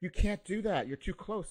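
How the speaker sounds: put-on angry woman's voice. Retelling what the lady on the bench said: imitating an angry lady. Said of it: "the lady on the bench was getting angry".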